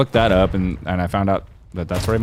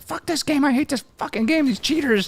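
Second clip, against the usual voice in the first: mock shrill raging scream, voice shooting up high. Speaker recalls Matt raging at a game in his room, imitating Matt screaming. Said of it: "he's just screaming at this game".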